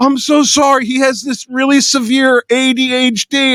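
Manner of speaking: high, slow half-sob, on the edge of tears. Retelling a wife apologizing for her husband, the speaker imitates her half crying. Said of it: "And she's like, half crying".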